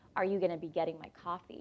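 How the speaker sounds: ordinary talk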